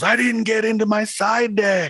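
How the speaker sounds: very high, drawn-out, weepy voice through tears. Retelling what a crying player said to the speaker, imitating someone crying. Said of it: "looks at me with tears running down his eyes".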